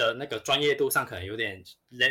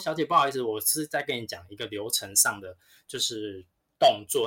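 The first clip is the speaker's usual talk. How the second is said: usual speaking voice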